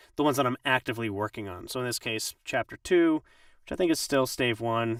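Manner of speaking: ordinary delivery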